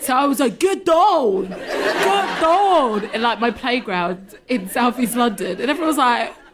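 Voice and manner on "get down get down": put-on very drawn-out, slow, high, odd American accent. Retelling a childhood playground imitation: imitating Arnold Schwarzenegger. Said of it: "my American accent was really weird".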